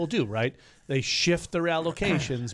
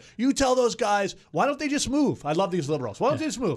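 mock male screaming voice, pitched much higher; 8 semitones higher than usual. Retelling a man at the front desk yelling at a young worker: imitating him screaming. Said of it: "He's screaming at her".

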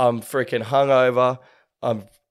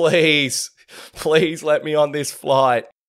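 desperate begging tone, on the edge of crying; 3 semitones higher than usual. Retelling past self at a closed airport gate, borderline in tears. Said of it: "I'm borderline in tears".

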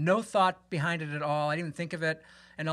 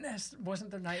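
ordinary delivery

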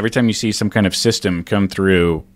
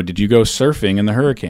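normal talking voice

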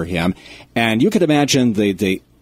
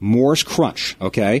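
ordinary talk

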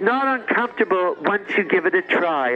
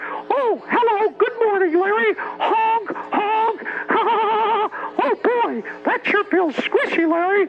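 very high and squeaky, spoken slowly; 13 semitones higher than usual. Imagining what to say to Larry at Disneyland, in a fun Mickey Mouse voice. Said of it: "do a fun Mickey Mouse voice like".

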